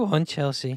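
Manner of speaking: put-on sad, depressed tone. Teasing the other speaker about Chelsea, mimicking him in a mock-sad depressed voice. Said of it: "I can feel the sadness and depression in your".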